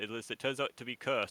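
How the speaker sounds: ordinary delivery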